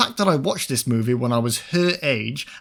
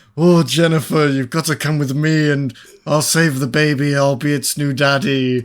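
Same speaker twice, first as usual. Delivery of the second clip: bad, unconvincing Irish accent; 6 dB louder than usual. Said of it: "Was he Irish?".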